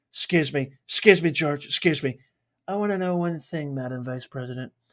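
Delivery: quiet, cutting-in delivery. Imagining questioning the Vice President, launch into a Trump impression. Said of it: "Trump impression incoming".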